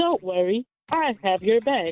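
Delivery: AI voice in phone voice-assistant style. Role-playing an AI talking to a stressed partner: imitating Siri's voice. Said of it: "I was trying to summon my best Siri voice".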